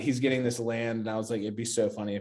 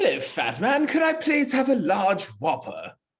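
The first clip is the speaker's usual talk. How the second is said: put-on very high, shrill, loud, swooping, sing-song cartoon baby; 11 semitones higher, 5 dB louder than usual. Playing the customer in a fast-food joke bit, doing a Stewie voice. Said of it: "I can do Stewie".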